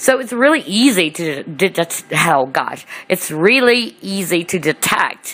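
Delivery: stuttering, stumbling over the words. Explaining something to listeners, tripping over the sentence: stuttering. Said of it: "I'm stuttering".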